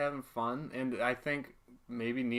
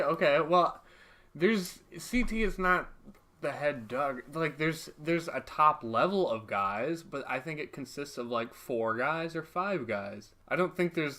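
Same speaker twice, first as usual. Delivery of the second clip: ordinary delivery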